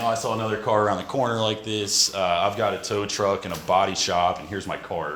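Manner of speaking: ordinary talk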